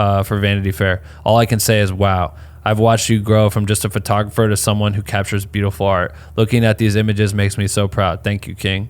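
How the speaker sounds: ordinary talk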